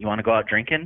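ordinary talk, nothing marked

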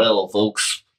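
put-on nasal alien voice. Asked by another speaker to do their best Blue Martian voice: Blue Martian voice. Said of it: "Do your best Blue Martian voice".

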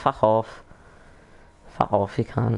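poor put-on British accent. Showing how a British friend says it: bad British accent. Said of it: "You can't do it very well".

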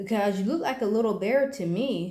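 plain reading voice

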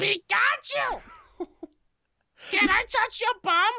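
put-on cartoon creature voice. Asked by the other person to do it again, performing a Pikachu voice. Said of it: "Can you do that Pikachu voice again?".

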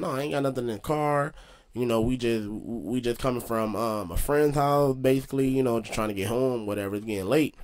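ordinary delivery

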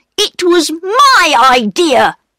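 very high, slow, angry, stretching the word "my". Peter contradicts Bobby in front of the station master, angry. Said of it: "said Peter angrily".

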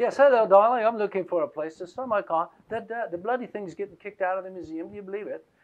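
bad put-on British accent. Retelling a phone call from a woman about her car, use a bad british accent. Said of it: "I can't do a good British accent".

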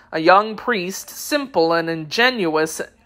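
ordinary delivery, nothing marked

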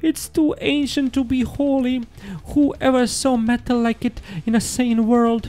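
shuddering speech. Narrator reading the clerk's words in a story, shuddering as he speaks. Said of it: "shuddered the clerk".

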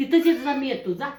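loud, high calling out.

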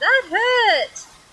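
high, pained cry, hurt drawn out. Narrator reading his line after the sticky plaster is ripped off, crying out in pain. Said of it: "he cried".

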